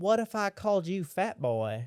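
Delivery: put-on, slow southern American drawl. Retelling how a woman mocked him when he was a kid, imitating a southern drawl. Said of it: "she's got a southern drawl and she goes".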